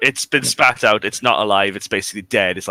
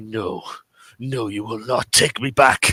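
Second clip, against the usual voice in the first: muttered under the breath, almost angrily. In a role-play, Drake stares at the mist where a hand appeared: angry mumble under breath. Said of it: "mumble under his breath, almost angrily".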